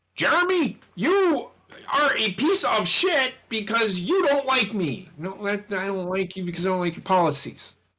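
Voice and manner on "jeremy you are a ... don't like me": high-pitched, angry, mad yelling. Retelling how the president yells from his podium: imitating Joe Biden yelling. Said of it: "he starts yelling at".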